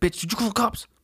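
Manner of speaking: high pitched, accusing yell. Acting out the guy in the house yelling at the chick: imitating someone yelling. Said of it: "he's probably yelling at this chick now".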